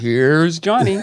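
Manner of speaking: late-night show announcer delivery. Recalling a late-night show introduction: Ed McMahon announcer call. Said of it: "you would hear Ed McMahon in the background going".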